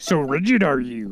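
very slow puppet-sage voice, every word drawn out. Mimicking a line from the recording being listened to: Yoda voice. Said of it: "that's great, Yoda".

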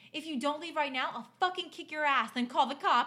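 high-pitched menacing shout. Retelling a story, quoting own past words: imitating own past shout. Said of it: "I shouted loud enough".

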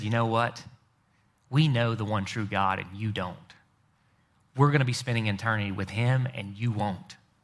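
put-on smugness. Acting out one group looking down on another, mock-smug. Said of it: "looked smugly down their noses and said".

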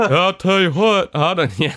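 slow, drawn-out, high-pitched cartoon voice. Retelling a politician's answer about UFOs in a Hank Hill voice. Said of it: "Hank Hill".

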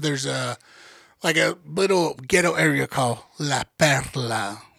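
name said with Spanish pronunciation, dropped low. Telling friends about San Juan, the speaker tries a Spanish pronunciation. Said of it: "You nailed it!".

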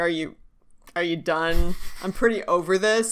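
ordinary talk, nothing marked

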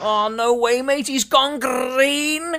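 very high, mocking street-kid voice. Joining a friend in mocking the younger generation, imitating younger generation's speech. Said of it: "That's what they speak like".

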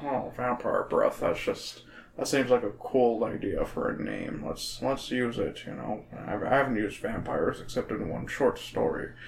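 soft, hushed, breathy voice. Imitating R L Stine musing about a book title: George Lucas voice. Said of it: "Why am I sounding like George Lucas?".

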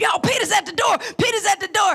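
thrilled, eager, excited cry, repeated, put-on. Retelling how the servant announced Peter at the door, acting out an excited exclamation. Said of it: "she was so excited".

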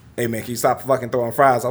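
play-acted calm, stern voice. Retelling what a calm man said to him, imitating someone calm and stern. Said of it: "said it with like a stern voice because he's so calm".

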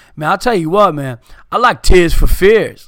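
put-on Brooklyn accent. Retelling what a guy said while they talked about music, brooklyn accent. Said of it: "in a Brooklyn accent".

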